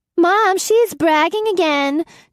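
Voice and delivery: put-on very high, squeaky little-girl voice. A boy mimics his little sister to their mother, high-pitched mimicking voice. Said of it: "said in a high-pitched voice to mimic his little sister".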